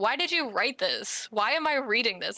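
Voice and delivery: put-on harsh, blunt, critical tone. Retelling a professor's blunt feedback on a paper: imitating a harsh professor. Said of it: "that guy was just like".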